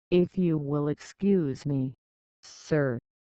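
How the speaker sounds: plain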